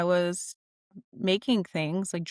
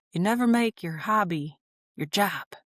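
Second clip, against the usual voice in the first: talking like a grandfather, grandpa voice. Quoting what grandpa said about hobbies and jobs, imitating grandpa's voice. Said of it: "I'm going to try to do my grandpa voice".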